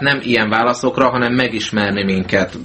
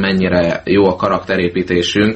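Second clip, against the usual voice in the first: ordinary talk, nothing marked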